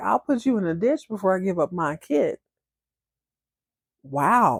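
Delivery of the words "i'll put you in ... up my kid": ordinary delivery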